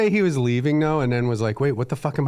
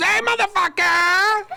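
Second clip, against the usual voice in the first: very high-pitched puppet voice. Acting out a puppet popping up on a show: puppet voice. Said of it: "a puppet pops up and goes".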